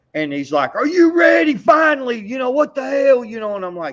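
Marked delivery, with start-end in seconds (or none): 0.7-3.5 put-on shrill, very high, impatient screaming yell. Retelling a man screaming at him while blowing an air horn, retelling a scream. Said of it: "he's screaming at me".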